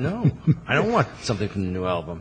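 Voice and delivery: ordinary talk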